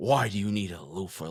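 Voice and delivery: dripping with disdain, disgusted and scornful. Acting out a woman asking why he needs a loofah, mock-disdainful. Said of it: "with the most disgusted look on her face and disdain in her voice".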